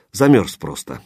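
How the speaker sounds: ordinary delivery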